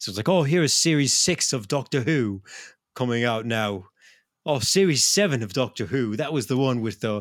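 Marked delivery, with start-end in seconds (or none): 0.3-6.2 bad, unconvincing put-on British accent. Explaining how people in England talk about TV seasons, in a terrible British accent. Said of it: "your terrible accent".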